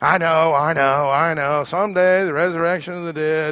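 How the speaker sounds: loud, dismissive, eye-rolling, sarcastic brush-off tone. Retelling Martha's answer to Jesus about her dead brother: imitating Martha's sarcasm. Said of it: "I think sarcastically".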